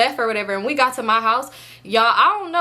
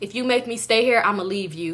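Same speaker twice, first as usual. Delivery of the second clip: ordinary talk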